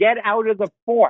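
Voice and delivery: mock, light, mild holler. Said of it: "and he'd yell".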